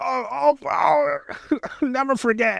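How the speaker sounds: overacted, very high, drawn-out dramatic cry. Retelling a second soldier being shot: imitating a dramatic death cry. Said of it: "all dramatic and shit".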